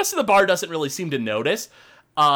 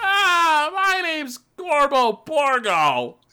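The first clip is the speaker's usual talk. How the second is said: high, very slow, drawn-out ogre voice; 9 semitones higher than usual. Voicing an ogre who introduces himself to the group: Gorbo Borgo ogre voice. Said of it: "the ogre kind of steps in ... he goes".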